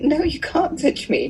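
indignant, high-pitched and slow.

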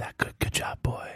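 hushed whisper in a character voice. Running the game, the narrator voices Fungalia to a player: Fungalia's whisper. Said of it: "You hear Fungalia's whisper".

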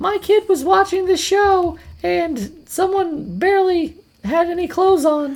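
high, complaining put-on voice. Speaker voicing a parent complaining about a show, in a mom voice. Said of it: "That's my mom voice".

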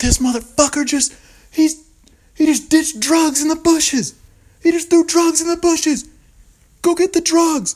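very high, shrill, loud, belligerent yelling. Retelling yelling at a cop to get a guy in trouble, retelling belligerent yelling. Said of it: "I am just belligerently yelling at this cop".

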